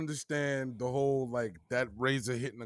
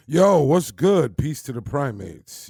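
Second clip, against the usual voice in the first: very loud, put-on, sexed-up voice; 11 dB louder than usual. Greeting podcast listeners after the co-host asks for a hello: put-on sexy voice. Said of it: "you put the, the sex in your voice there".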